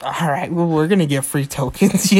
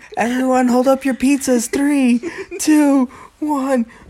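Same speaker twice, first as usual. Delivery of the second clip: mock full-mouthed speech, higher pitch; 9 semitones higher than usual. Retelling a New Year's Eve pizza countdown, imitating talking with mouth full. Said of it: "I said it like that because there was usually food in my mouth".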